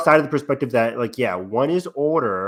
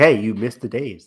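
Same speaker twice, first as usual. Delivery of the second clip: put-on deadpan, flat, serious, emotionless monotone. Speaker imitates a voice they discuss with another speaker; imitating a flat, serious voice. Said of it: "Very serious. Like it doesn't get angry, doesn't get sad, doesn't get happy".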